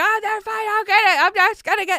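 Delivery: very high-pitched, shrill, loud yelling. Retelling a chaotic night by the pool, imitating someone yelling. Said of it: "my sister's yelling, like".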